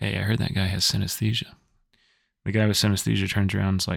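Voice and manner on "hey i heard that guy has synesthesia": acted, quiet, whispered muttering under the breath. Telling a joke, speaker quotes a man on a train to his friend, retelling a line said under breath. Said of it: "says under his breath".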